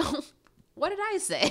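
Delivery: high, loud, flustered, embarrassed squeak.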